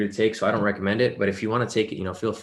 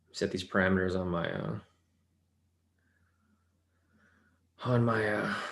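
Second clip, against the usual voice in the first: out of breath, breathless, quieter; 6 dB quieter than usual. Setting trade parameters on a trading account, out of breath. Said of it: "I'm fucking out of breath".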